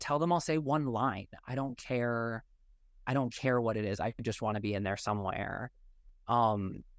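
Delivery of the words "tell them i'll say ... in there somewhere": ordinary talk, nothing marked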